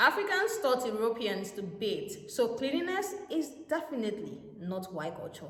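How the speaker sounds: normal talking voice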